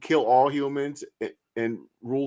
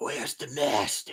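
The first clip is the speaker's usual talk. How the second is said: whispered put-on vampire voice, deep, stern, creepy; 7 dB quieter than usual. Describing a strange voice someone used, doing a put-on deep creepy whisper. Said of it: "they tried to make a deep voice".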